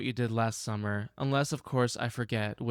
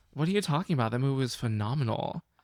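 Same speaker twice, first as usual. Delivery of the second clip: ordinary talk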